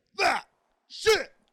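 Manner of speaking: shouting. A podcast co-host hypes like a DJ, shouting into the mic. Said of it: "why do you have to shout down the fucking microphone".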